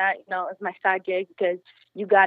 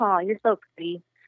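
put-on patronizing, condescending tone. Retelling how a restaurant guest smiled and answered: imitating a patronizing compliment. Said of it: "try to insult me and just call me, like, like, I'm dumb".

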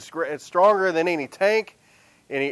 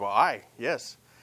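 put-on Scottish accent, quieter; 6 semitones lower, 5 dB quieter than usual. Retelling a film scene, a speaker voices the nephew's reply in a Scottish impression. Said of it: "That's my Scottish impression".

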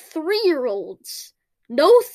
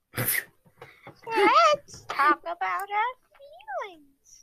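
clumsy, high-pitched put-on puppet voice; 6 semitones higher, 5 dB quieter than usual. Discussing an Elmo talk show spinoff, speaker does a bad Elmo impression. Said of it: "That's a bad Elmo impression".

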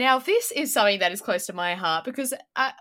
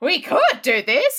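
loud, raised, sarcastic delivery; 3 semitones higher, 6 dB louder than usual. Retelling a cartoon scene, imitating Grandpa Simpson sarcastically. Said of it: "in sarcastic".

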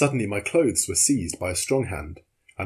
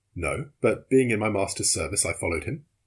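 ordinary delivery

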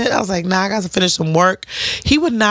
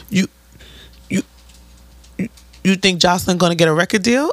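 put-on stuttering man's voice. Retelling how a man talked to her: imitating a stuttering man.

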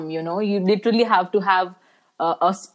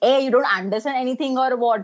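put-on angry scolding woman voice, higher; 4 semitones higher than usual. Retelling how a triggered woman scolded the speaker: imitating an angry scolding woman. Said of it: "the accent or the voice tone in which she said".

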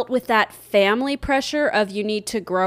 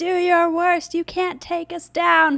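very high-pitched, shrill screaming; 9 semitones higher than usual. Retelling a film scene of Lieutenant Dan at the storm: imitating Lieutenant Dan screaming. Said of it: "he's, like, screaming up at the sky".

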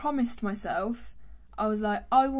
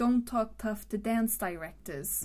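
put-on New York accent with teeth-touched D sounds. Demonstrating accent tips to the other speaker, New York accent. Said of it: "the New York accent, they say that they have a dental D".

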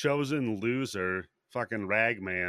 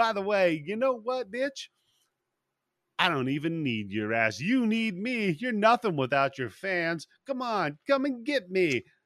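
mocking, taunting tone, higher pitch; 8 semitones higher than usual. Retelling how a character taunts a trapped villain: imitating a taunt. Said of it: "he just starts taunting him".

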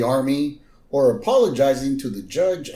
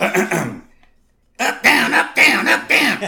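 robot-like yelling, mechanical shouted voice; 11 semitones higher, 5 dB louder than usual. Imitating how they yell at them over there: robotic yelling voice. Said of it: "they change their voices... What are you trying to sound like a robot for?".

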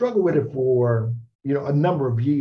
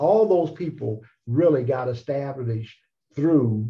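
plain

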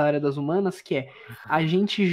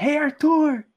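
put-on high hollering shout; 8 semitones higher than usual. Speaker retells a guy shouting to someone in the street: retelling a shout. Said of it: "O maluco gritando pra ele na rua".

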